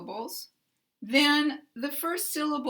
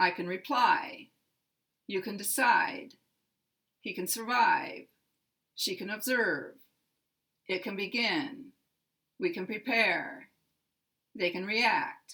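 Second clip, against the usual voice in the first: strong stress on the verb's second syllable. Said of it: "stress is on the second syllable".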